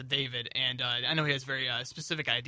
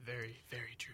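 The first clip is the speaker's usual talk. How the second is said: spooky voice, quieter; 15 dB quieter than usual. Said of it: "you don't get to use the creepy voice".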